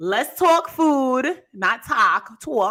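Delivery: slight put-on New York accent. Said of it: "I gotta put my little New York accent on it".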